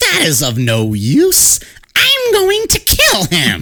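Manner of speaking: put-on storybook witch voice, swooping and sing-song. Retelling a historical account, the speaker quotes the witch in a witch voice. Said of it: "I keep thinking I'm done with this witch voice".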